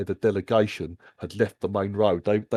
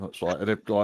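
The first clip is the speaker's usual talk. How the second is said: usual speaking voice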